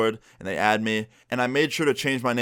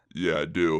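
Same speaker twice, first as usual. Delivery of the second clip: faked, low, deep put-on voice; 6 semitones lower than usual. Retelling disguising the voice on a call: put-on deep voice. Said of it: "I tried to make my voice really deep".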